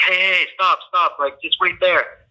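play-acted high, screaming call. Speaker retells a girl running up from across the street; imitating a girl screaming. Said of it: "She's screaming at me".

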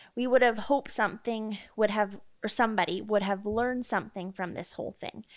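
ordinary delivery

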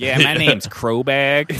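very drawn-out, slow, loud put-on East Coast accent. Imitating a friend who introduces himself by a nickname: put-on East Coast accent. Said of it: "suddenly you have, like, an East Coast accent".

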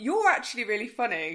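very loud, high, stunned, shocked exclamation. Showing how the speaker would say it instead of laughing, in a shocked tone. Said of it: "I'd say it in a shock, like".

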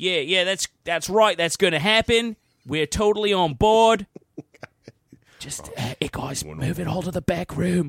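imitated Australian accent. Acting out Australia's reply to a worldwide alcohol ban, in an imitated Australian accent. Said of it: "So if I can do an Australian accent".

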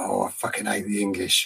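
put-on thick, broad Scottish accent, muttered low and soft. Retelling what a man said to the bloke beside him in the pub, broad Scottish accent. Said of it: "in his broad Scottish accent".

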